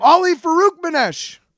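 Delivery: angry outburst. Speaker shows what they shout when they get mad, mock-angry exclamation. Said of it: "I get mad and I go".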